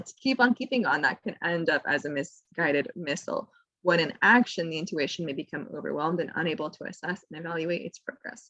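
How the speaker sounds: normal talking voice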